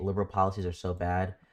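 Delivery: plain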